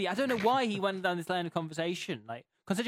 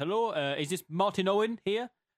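attempted, put-on Indian accent. Speaker retelling a phone call from a caller asking for his dad: put-on indian accent. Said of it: "hence the accent I may try to do".

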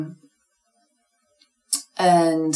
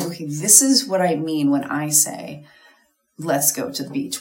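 usual speaking voice

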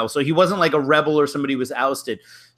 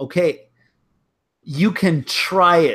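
play-acted, slow, very defiant tone; 2 semitones higher than usual. Retelling a story in which a teacher dares a student to try: imitating a defiant reply. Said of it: "very defiantly says".

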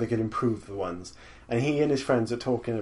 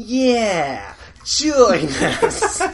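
put-on whiny voice, much higher; 10 semitones higher, 8 dB louder than usual. Retelling a parody bit where Boba Fett mimics Darth Vader, in a whiny Boba Fett voice. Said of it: "giving Boba Fett like a really whiny voice".

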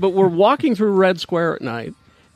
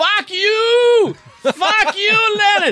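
put-on very high drunken yelling, "you" drawn out; 3 dB louder than usual. Telling a story, the speaker acts out a drunk man yelling at someone: imitating a drunk man yelling. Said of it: "So he starts yelling at Lenin".

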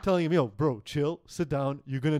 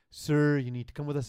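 put-on very gentle, soft speech. Retelling police officers asking a man to leave the bus: imitating cops speaking very gently. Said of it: "they start talking to him very gently".

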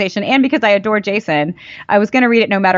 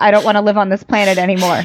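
normal talking voice

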